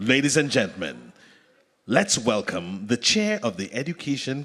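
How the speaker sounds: deep radio host announcer voice. Introducing a guest to an audience as a surprise, radio announcer voice. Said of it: "Upon the radio voice".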